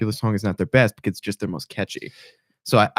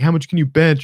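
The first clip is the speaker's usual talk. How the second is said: high-pitched yelling, acted out; 7 semitones higher, 4 dB louder than usual. Retelling how a guy in a full room yelled out: imitating someone yelling. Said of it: "Some guy yells".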